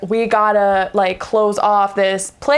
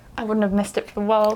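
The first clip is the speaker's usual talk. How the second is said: put-on crying, quieter and faster; 5 dB quieter than usual. Recapping a scene, the speaker quotes a woman on the phone with him: imitating someone crying. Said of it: "she's like crying".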